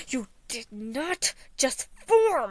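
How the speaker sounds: slow, loud yell through gritted, clenched teeth. Narrator reads the speaker's retort to a sincere companion, yelling through gritted teeth. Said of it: "I yelled through gritted teeth".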